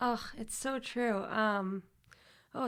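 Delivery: overcome with emotion, words coming very slowly. Asked for their view in turn, the speaker answers, overwhelmed with emotion. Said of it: "I'm just kind of like overwhelmed with emotions".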